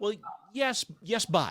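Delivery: high, gentle, mildly resisting tone.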